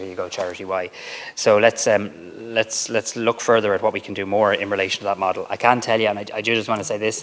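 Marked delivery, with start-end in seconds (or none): none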